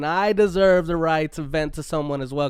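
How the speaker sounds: ordinary delivery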